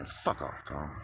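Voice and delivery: quiet mutter under breath. Retelling what the speaker said from under a blanket, quiet, under the breath. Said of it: "but really quiet".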